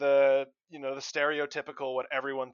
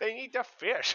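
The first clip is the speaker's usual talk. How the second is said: put-on kobold voice, higher and quieter; 7 semitones higher, 7 dB quieter than usual. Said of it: "you saying fish in the kobold voice".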